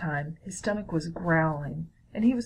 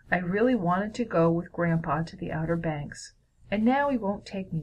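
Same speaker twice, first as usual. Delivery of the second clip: ordinary delivery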